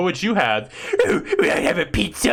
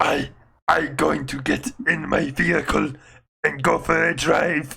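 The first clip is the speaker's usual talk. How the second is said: put-on big strongman voice, lower; 3 semitones lower than usual. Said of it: "I want you to do that voice all the time".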